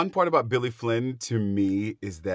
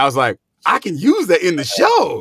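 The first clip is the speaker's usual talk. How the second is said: plain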